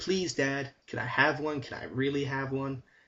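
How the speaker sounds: heavily sarcastic, insincere, pleading put-on kid voice. Retelling a game's child character asking his dad for a balloon: imitating a sarcastic kid. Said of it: "he just sounds so sarcastic".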